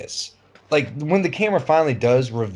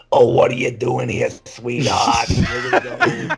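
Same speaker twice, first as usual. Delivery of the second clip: put-on classic smoky-voiced old grandma voice. Describing a film coworker character's voice, smoker grandma voice. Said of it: "that classic voice you've heard from every grandma that smokes".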